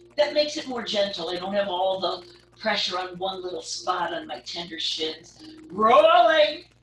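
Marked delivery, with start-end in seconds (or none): 5.7-6.6 loud excited yell. Guiding a rolling exercise, cueing the move with an excited yell. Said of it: "I shouldn't get all excited and yell like that".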